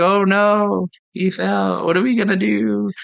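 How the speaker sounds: acted-out unbothered, nonchalant, calm sarcastic tone. Comparing the original film and remake, quoting a character falling in: imitating Wonka's nonchalant sarcasm. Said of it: "quiet and nonchalant and just like sarcastic".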